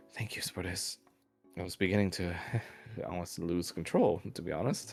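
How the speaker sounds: rapid, quick, hushed whispered words. Voicing a doctor who thanks Spartus after the panic subsides: whispering. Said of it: "Doctor Schaefer whispers to you".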